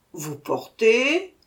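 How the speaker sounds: growled with contempt and scorn. A narrator reads the little man's answer to a request, growled with contempt. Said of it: "grogna le petit homme avec mépris".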